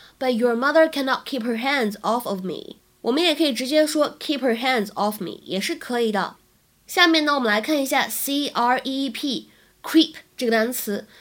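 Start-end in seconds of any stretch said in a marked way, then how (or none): none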